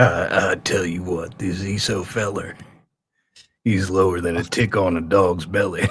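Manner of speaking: pitch dropped low and drawled out. Trying out a special voice planned for the secret stream, in a Cowboy Shuley voice. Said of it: "a special voice, and the voice will be called Cowboy Shuley".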